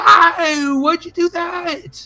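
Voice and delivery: put-on very high, drawn-out little boy voice. Voicing a little boy whose toe was stepped on: little boy voice. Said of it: "a little boy is like".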